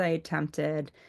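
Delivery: ordinary delivery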